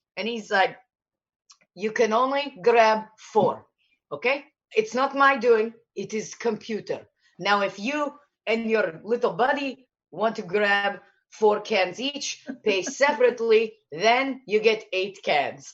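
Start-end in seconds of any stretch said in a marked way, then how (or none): 1.8-15.7 put-on Slavic accent. Retelling what a man told an angry customer, Eastern Bloc accent. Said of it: "Eastern Bloc accent".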